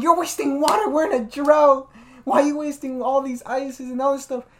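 high, loud, mad scolding tone.

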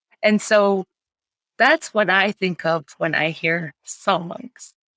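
emotional voice, catching and choked up. The speaker remembers her grandmother's words, choked up. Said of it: "it's choking me up".

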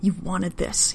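hissing delivery. A man speaks to the woman he's shoving against a wall, hissing. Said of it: "he hisses".

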